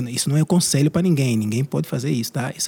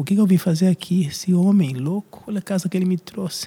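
mock crying, much higher pitch; 5 semitones higher than usual. Husband retelling how he found his new wife in the bathroom: imitating someone crying. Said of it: "encontrei ela no banheiro chorando tipo".

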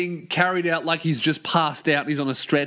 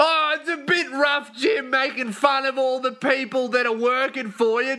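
put-on heckler voice, higher, yelled out; 8 semitones higher than usual. Recounting a man in the arena heckling jim, retelling a heckler's yell. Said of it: "He yells out".

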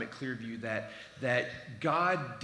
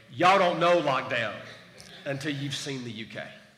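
loud, put-on American Southern accent; 8 dB louder than usual. Talking about the uk going into lockdown: put-on southern us accent. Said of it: "I'm going to say this in a southern way".

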